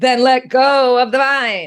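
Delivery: booming, high-pitched bellowing voice. Telling a joke, the voice from above answers the man on the vine: bellowing voice. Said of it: "the voice bellows".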